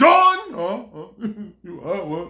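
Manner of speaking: big, manly father voice. Describing their big father, the speaker imitates him calling Dawn: imitating dad's manly voice. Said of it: "You know that manly voice".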